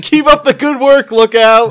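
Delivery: put-on encouraging yelling. Shouting encouragement to the crew while working on the ship: in-character shouting. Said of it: "I start shouting things like".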